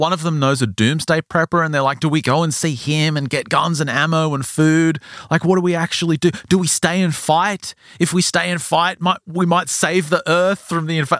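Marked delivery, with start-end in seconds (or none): 2.0-11.2 put-on screaming, higher pitch. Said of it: "They're just screaming at each other".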